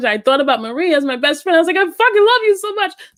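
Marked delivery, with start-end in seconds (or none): 1.8-2.9 put-on high, choked-up, tearful gush, near crying. Retelling calling a best friend while crying: retelling own crying words. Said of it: "So I called her crying".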